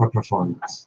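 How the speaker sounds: quiet, breathy, hushed whisper. Retelling leaning close to someone to say something: retelling a whisper. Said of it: "I lean up to Silky Tom and whisper".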